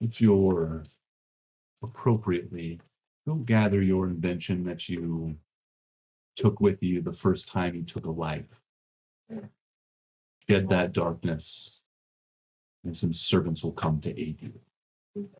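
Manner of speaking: contemptuous, disdainful, scornful tone. A lady character answers her servant's plea in a retold scene: disdainful voice. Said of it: "disdain in her voice come through".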